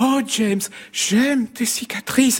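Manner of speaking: tiny, sweet, sugary, very high little voice. Quoting the ending line of a film as it was delivered, in a small sugary voice. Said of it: "il lui a donné une petite voix comme ça, un peu sucrée".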